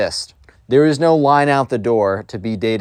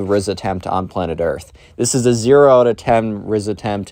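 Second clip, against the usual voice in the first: plain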